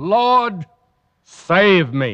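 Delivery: calling out. Retelling how Simon Peter called to the Lord: retelling a cry for help. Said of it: "But when he did, he cried out".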